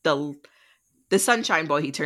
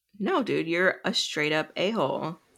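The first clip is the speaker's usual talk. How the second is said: usual speaking voice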